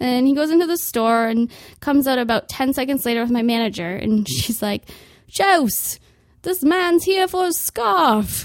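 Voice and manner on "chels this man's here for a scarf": put-on British accent, pitched up. Speaker retells what her manager said to her, in a british accent. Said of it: "that was a British accent".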